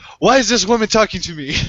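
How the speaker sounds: accent from Saudi Arabia. Imagining a Saudi cousin joining a Disney episode, put-on Saudi Arabic accent. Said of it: "Mine just sounds racist".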